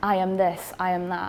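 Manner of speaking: normal talking voice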